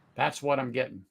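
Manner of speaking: ordinary talk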